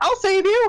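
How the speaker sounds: tiny, very high, loud squeaky cry. Retelling Erky coming through the door: Erky tiny pipsqueak voice. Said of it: "in this tiny pipsqueak voice".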